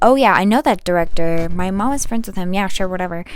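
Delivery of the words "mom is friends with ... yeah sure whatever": ordinary talk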